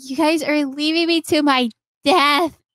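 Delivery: high, tearful, sobbing, crying voice. Retelling a character who feels left to die, imitating a character crying.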